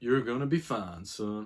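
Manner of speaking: put-on broad Southern US accent. Recalling what his doctor said at the post-op check, in a deep southern accent. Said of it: "in his deep southern accent".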